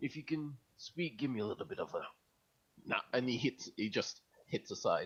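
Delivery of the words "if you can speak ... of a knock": pure soft half-whisper, no voice. Speaking in character to someone shut in a box: half-whispering. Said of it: "he's just whispering that to the box and be like".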